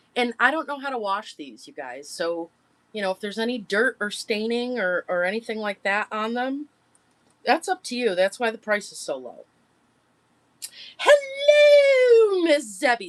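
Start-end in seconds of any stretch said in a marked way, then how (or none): 11.0-13.1 put-on very high, booming, swooping old-lady voice, hello drawn out. Seller of plush toys greets Miss Zebby on stream: Mrs. Doubtfire voice. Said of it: "That was my best Missus Doubtfire voice".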